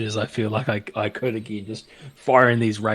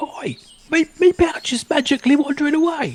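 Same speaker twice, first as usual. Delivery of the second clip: calling out, pitched very high and raised; 5 dB louder than usual. Playing Lovejoy, calling out as the money pouch floats away: calling out in character as Lovejoy. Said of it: "I think Lovejoy calls out".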